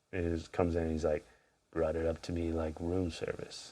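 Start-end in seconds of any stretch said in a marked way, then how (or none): 1.7-3.7 low, deep voiceover narration. Describing a film's opening voiceover, low deep Captain Willard voiceover. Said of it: "that low, deep voice".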